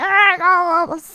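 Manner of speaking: very loud, high, burbling, bubbly octopus-creature alien voice. Acting out an octopus-type alien: bubbly octopus alien voice. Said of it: "bubbly voice".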